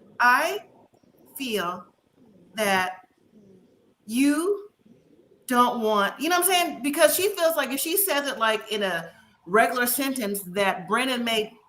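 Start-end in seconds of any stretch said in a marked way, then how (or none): 0.2-6.2 very slow, halting, every word set apart. Describing how Emily talks, imitating Emily's very slow speech. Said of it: "Emily talks like very slow, like every word".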